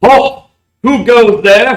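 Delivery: very high, very loud booming call. Narrating a robed man with a wand at his throat calling out, booming call. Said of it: "he booms out".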